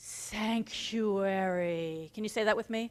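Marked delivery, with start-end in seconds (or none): 0.0-2.1 tranquil, settled, peaceful and calm voice. Teaching the word sanctuary for others to repeat, peaceful and calm. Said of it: "in this peaceful, calm way".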